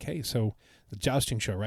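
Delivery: plain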